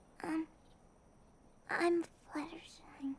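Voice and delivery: very quiet, barely audible speech. Giving her name to a newcomer who can't hear it: too quiet to hear. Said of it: "I'm sorry, what was that?".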